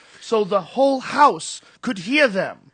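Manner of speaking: very loud, very high, overprojected theatrical stage voice. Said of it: "the actor had to talk like this".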